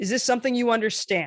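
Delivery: statement tune, pitch dropping on understand. Demonstrating how to ask a question in command tone, dropping at the end. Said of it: "dropping at the end".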